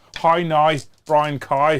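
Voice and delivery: very slow, drawn-out Northern Irish accent. Showing the others how to talk northern irish, in a northern irish accent. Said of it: "That's how you talk Northern Irish".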